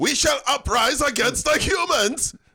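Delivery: fake German accent, pitched very high. Joking that an old car is gaining sentience: put-on German car voice. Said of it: "That was the Hitler of cars".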